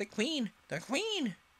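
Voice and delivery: very high, urgent, anxious cry. Card gardener Five, watching across the garden, anxiously calling out. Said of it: "who had been anxiously looking across the garden, called out".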